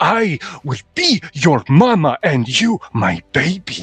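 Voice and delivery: loud, booming, resounding voice. Voicing Mama, whose voice booms out at the players: booming voice. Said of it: "'s voice booms out".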